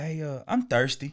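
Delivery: put-on slow, childlike small-kid voice. Retelling what a young stepson said, in a little voice. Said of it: "That little voice".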